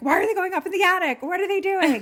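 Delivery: high, loud, fast yelling. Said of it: "yelling at the T V".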